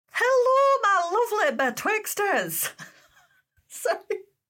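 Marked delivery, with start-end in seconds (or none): 0.2-2.7 bad put-on Scottish accent, much higher, louder. A host greets listeners, the betwixters, in a bad Scottish accent. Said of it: "I thought I could do a Scottish accent".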